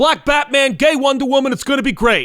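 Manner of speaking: high, in-your-face, hyped-up yelling. Retelling what DiDio kept saying about the comics: imitating DiDio yelling. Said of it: "DiDio yelling in my face".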